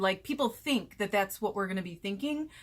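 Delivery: ordinary talk, nothing marked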